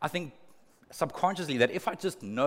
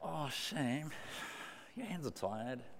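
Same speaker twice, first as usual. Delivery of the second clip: very quiet, murmured put-on Australian accent; 11 dB quieter than usual. Explaining a bible verse, voicing what god is not saying, aussie accent. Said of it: "He's got an Aussie accent all of a sudden".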